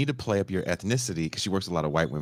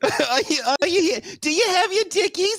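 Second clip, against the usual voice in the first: put-on old lady voice, higher and louder; 5 dB louder than usual.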